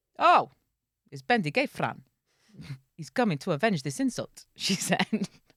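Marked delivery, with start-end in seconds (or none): 0.2-4.5 put-on southern Welsh accent. Reading a story aloud as a bit, in Nessa's southern Welsh accent. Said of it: "I could only do a southern Welsh accent".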